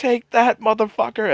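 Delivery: very high, shrill shriek. Retelling a scene where a man starts screaming, imitating someone screaming. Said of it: "he just starts screaming".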